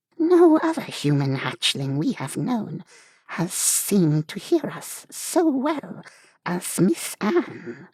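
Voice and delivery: very high, sweet voice with hissy lisp. A story narrator voices Truth in a sweet, hissy, lispy, snake-type voice. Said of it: "in her sweet, hissy, lispy, distinctly snake-type voice".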